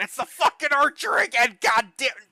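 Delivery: high, alarmed screaming. Narrating the people in a caravan as an archer strikes, screaming in alarm. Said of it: "they just start screaming".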